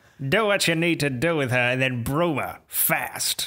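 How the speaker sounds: put-on villain voice. Repeating a villain's film line, laughing: Green Goblin voice. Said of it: "You did a good Green Goblin".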